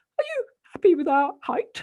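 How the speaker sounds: very loud, rather high-pitched, swooping rising tone. Explaining the five-hundred-foot rule, the speaker shows what they ask in a rather high-pitched voice. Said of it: "I will say in a rather high-pitched voice".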